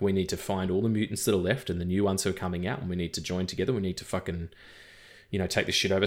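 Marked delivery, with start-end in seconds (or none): none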